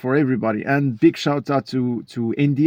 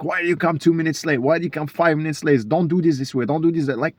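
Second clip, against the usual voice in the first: put-on screaming, scolding, berating voice; 3 semitones higher than usual. Describing not wanting a nine-to-five job, imitating a screaming boss. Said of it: "the boss is screaming at me like".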